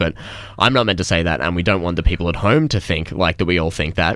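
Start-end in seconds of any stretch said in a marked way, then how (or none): none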